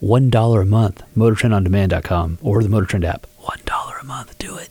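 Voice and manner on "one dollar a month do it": soft, whispered ASMR-style delivery. Giving show plugs after saying the show is over, whispering. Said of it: "turn into A S M R?".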